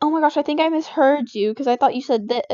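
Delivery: normal talking voice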